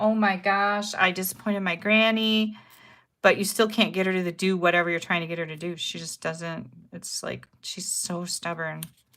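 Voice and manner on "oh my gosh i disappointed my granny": mock tearful crying child voice, slow and weepy. Retelling how the grandchild reacts to being disciplined: imitating a child crying. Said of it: "she'll just start crying like".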